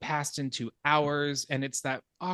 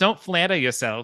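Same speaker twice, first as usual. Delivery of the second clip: failed attempt at a put-on Australian accent; 3 semitones higher, 8 dB louder than usual. Quoting a woman's comeback from a scene the speaker loves, attempted Australian accent. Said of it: "Did that sound Australian?".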